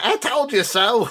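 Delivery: put-on reedy little squeak of an old man. Picturing the old man from the story, in a squeaky old man voice. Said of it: "a like a squeaky voice".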